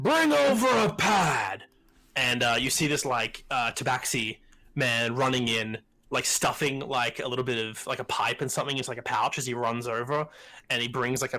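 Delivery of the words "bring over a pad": calling out loudly. Voicing a character shouting an order across the room: NPC shouting an order. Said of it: "literally just shouts into us when he goes".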